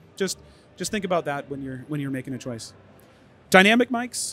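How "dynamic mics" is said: shouting, much louder and higher. Giving listeners advice on choosing a podcasting mic, shouting. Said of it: "sorry for shouting".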